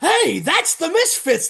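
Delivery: shrill, high-pitched, loud acted scream. Retelling a wrestling run-in seen on TV: imitating Tony Schiavone screaming. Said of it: "Tony Schiavone screaming".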